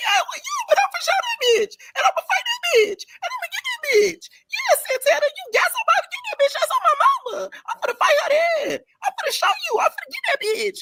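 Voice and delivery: teary crying voice, very high pitched. Acting out Pretty P as she starts crying, imitating Pretty P's crying voice. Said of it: "When she starts getting into her crying voice".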